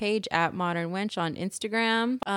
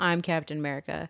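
mock-firm, lower and quieter; 4 semitones lower, 3 dB quieter than usual. Retelling how a film character claimed his new title, imitating a firm voice. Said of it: "he said it with a firm voice too".

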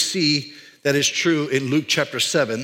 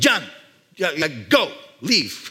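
acted, really angry shopkeeper voice, swooping and slow. Retelling how the restaurant owner ordered them out: imitating an angry shopkeeper. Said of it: "you can tell he's really angry".

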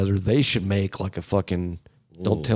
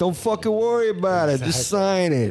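put-on mafia tough-guy voice, higher pitch; 11 semitones higher than usual. Acting out mafia guys telling someone to sign: imitating how mafia guys talk. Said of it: "that's what mafia dudes talk like".

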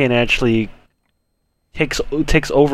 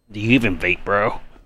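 deep, hushed voice. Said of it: "you had to say it in the Vader voice".

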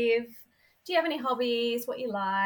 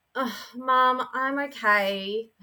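put-on teenager tone. Retelling a daughter's reply to a worried mum: imitating a teenager tone. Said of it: "in this, like, teenager tone".

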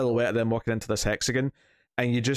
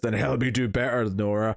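put-on angry, distorted, demonic snarl. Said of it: "kinda goes, like, distorted and says".

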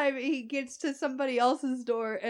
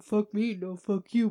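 low mumble, muttered to oneself; 4 semitones lower than usual. Retelling him walking down the way: imitating mumbling to himself. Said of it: "mumbling to himself".

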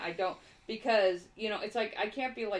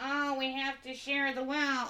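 mocking put-on voice, pitched higher; 4 semitones higher than usual. Mocking what Susan Sarandon says up there: imitating Susan Sarandon. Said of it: "Susan Sarandon gets up there and says".

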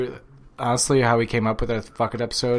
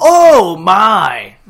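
very high, loud, shrill outcry, long stretched "my"; 9 semitones higher, 16 dB louder than usual. Showing a new favorite bit: Michael Cole impression. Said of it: "Just do a Michael Cole".

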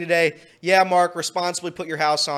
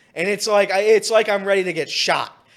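usual speaking voice

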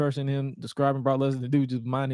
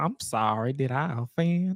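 put-on Southern accent, slower. Retelling how Stephanie answered an offended Moolah, in Stephanie's Southern accent. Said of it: "And then Stephanie's southern accent".

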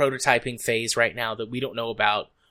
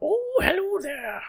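crazy prospector voice, very high pitch. Joking about an overgrown beard, speaker demonstrates a prospector voice. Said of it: "you need to have a prospector voice".

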